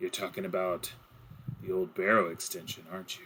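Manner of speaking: knowing, hushed voice just above a half-whisper. Voicing a character who leans in close to a player: just above a half-whisper. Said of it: "he's kind of a little bit above a whisper".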